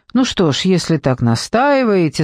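plain

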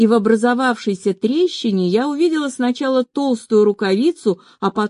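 ordinary delivery, nothing marked

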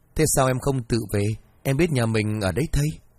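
ordinary delivery

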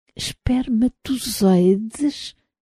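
murmured under breath. A man staring into a microscope murmurs to himself. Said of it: "murmurou ele para si mesmo".

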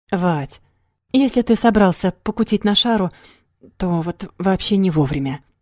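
ordinary delivery

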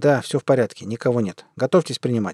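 plain

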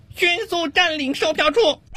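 very high, slow shout.

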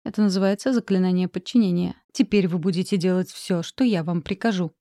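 ordinary delivery, nothing marked

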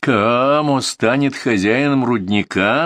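scornful, jeering, mocking, derisive. Sekki answers Pyotr in front of the listening men, mocking. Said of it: "насмешливо сказал Секки".

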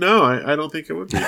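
mock flat, deadpan tone. Retelling how a man answered a woman's question, retelling a deadpan reply. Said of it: "All deadpan".

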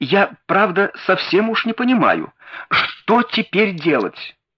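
high, swooping, helpless, begging, pleading babble. Thaddeus Sholto answers Holmes as they go into the house: babbling pleadingly. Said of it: "умоляюще пролепетал".

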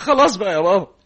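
high, loud, tearful crying, pleading tone. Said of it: "ما تعيطش".

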